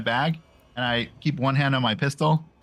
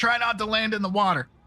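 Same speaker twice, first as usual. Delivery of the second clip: raised, higher-pitched yell; 8 semitones higher than usual. A character shouts a warning to the party about landing: yelling a warning. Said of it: "I'm yelling at the party".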